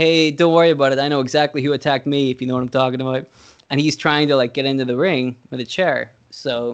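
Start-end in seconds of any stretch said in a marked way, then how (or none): none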